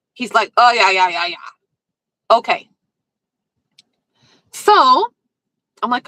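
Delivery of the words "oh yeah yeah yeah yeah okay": blustering, flustered, blustery delivery. Retelling a man's reply to a request to turn it down: imitating a blustery reply. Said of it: "he gets all blustery".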